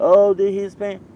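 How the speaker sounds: mock whining voice.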